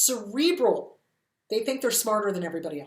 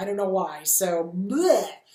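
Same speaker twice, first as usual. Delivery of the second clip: usual speaking voice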